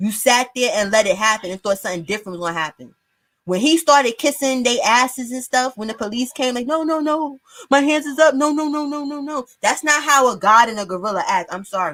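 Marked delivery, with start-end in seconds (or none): 6.7-9.5 timid, meek voice, pitched high. Mocking how someone pleaded with the police: imitating a meek, timid plea. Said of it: "you supposed to put a little bass in your voice".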